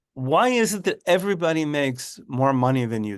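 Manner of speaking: ordinary talk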